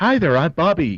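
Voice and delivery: put-on high, friendly teenage kid voice. Joking that the name Bobby sounds like a kid: friendly high school kid voice. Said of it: "Bobby seems like a friendly".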